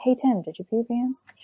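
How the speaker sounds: soft, hushed, under the breath. Retelling how another mom quietly asked a child a question: imitating a half-whisper. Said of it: "whispered it to him".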